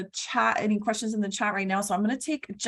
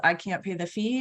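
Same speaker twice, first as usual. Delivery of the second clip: ordinary talk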